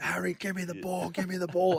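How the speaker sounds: high, frantic scream. Retelling a teammate calling for the ball: imitating someone screaming. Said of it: "screaming at him".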